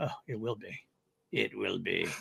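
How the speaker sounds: slow, rough, creaky drawl, words dragged out. Quoting a favorite line from the trailer: Cad Bane voice. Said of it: "the Cad Bane going".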